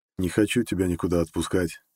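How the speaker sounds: ordinary delivery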